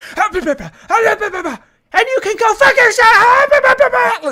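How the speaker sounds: furious, very high, very loud, shrill, drawn-out scream. Telling someone off in an argument: yelling. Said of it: "why is she yelling at us?".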